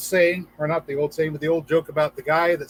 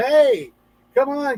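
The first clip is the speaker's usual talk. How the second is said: play-acted half-shout, high and mild; 9 semitones higher, 4 dB louder than usual. Telling the flood story, the chopper crew calls to the praying man, retelling a yell. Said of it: "sort of yells out".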